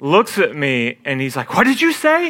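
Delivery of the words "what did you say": very high, stunned, shocked disbelief. Retelling how another player turned on the court: imitating shocked surprise. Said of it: "shock and surprise".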